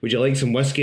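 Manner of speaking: ordinary delivery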